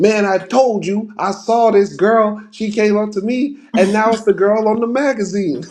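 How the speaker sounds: put-on, high-pitched wild ranting, raving on and on. Recapping the story, acting out Harold Jackson ranting at a coffee shop. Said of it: "Harold Jackson is like ranting and raving".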